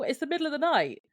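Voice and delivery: very high-pitched screaming yell. Retelling what was yelled at the television during a scene: retelling a scream at the TV. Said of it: "I screamed at the television".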